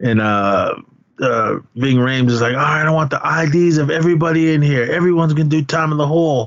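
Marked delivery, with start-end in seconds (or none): 2.5-6.5 put-on barking yell, pitched a touch higher. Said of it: "he starts yelling".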